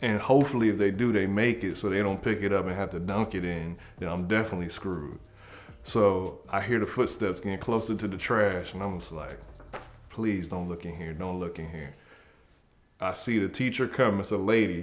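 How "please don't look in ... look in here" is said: mock-scared pleading, lower, quieter. Hiding in the trash as footsteps come closer, retelling a scared plea. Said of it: "And now I'm scared".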